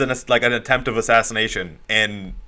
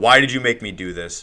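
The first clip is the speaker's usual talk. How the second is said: put-on tearful voice. Retelling a comic scene after burning Wolverine: mock crying as Cyclops. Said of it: "and he's crying".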